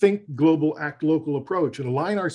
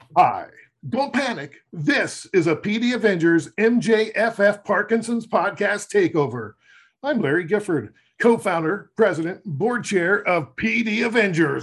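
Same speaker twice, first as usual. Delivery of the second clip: big, stagey, dramatic, theatrical delivery; 4 semitones higher than usual. Podcast co-founder opens the takeover episode introducing himself, with a dramatic delivery. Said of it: "That was dramatic, Larry".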